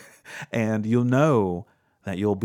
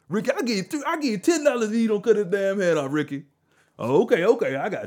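put-on old man voice, much higher pitch; 11 semitones higher than usual.

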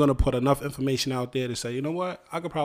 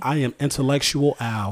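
put-on intellectual, mock sophisticated voice; 4 dB louder than usual. Joking after being called intellectual: put-on intellectual voice. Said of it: "I'm gonna speak like this for the rest of the podcast".

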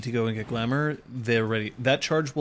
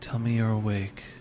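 whispered character voice; 2 semitones lower than usual. Voicing Kyoko waking a thrashing player character: Kyoko whispering. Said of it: "And then whispers".

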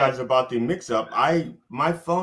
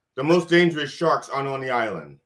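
normal talking voice

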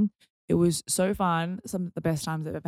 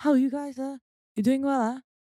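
put-on Malaysian accent, older uncle-type voice; 9 semitones higher than usual. Retelling a nosy man from a group coming to their table, Malaysian uncle accent. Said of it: "i'm just doing a malaysian accent".

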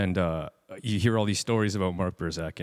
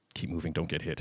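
quiet voice, pitched lower; 3 semitones lower, 6 dB quieter than usual. Retelling what a man said while strapping on gear, a quiet remark. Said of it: "he just quietly goes".

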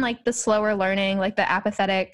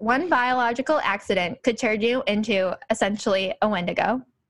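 ordinary talk, nothing marked

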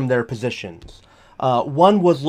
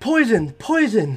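yelling in alarm. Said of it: "So, you start yelling".

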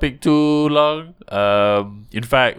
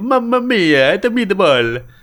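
put-on very high caricature Italian accent; 9 semitones higher, 4 dB louder than usual. Comparing countries' reputations, the speaker mimics Italians in a caricature Italian accent. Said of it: "Italian is like".

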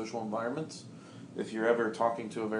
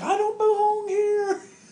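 very high, loud, drawn-out little toy voice shout; 10 dB louder than usual. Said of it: "and he's like".

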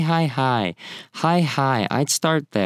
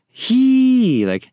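very high, drawn-out, mouse-like squeak on "hee"; 13 semitones higher, 7 dB louder than usual. Describing an expressive sound, the speaker demonstrates it in a high-pitched voice. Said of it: "but in a high pitched uh, voice".

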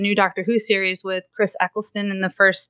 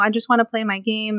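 put-on crying child voice. Retelling a little kid who got up crying; imitating a crying kid. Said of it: "he's like crying and he's like".

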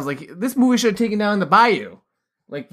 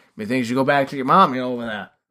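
put-on Maine accent, low and quick; 6 semitones lower than usual. Mimicking how a film character talks to another character: put-on Maine accent. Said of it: "why are you talking like you're from Maine?".

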